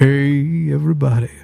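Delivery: put-on strained bass voice, hard to reach, drawn-out "hey". Streamer greets everybody after live chat asks for a deep voice, forced deep voice. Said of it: "My deep voice is hard to hit".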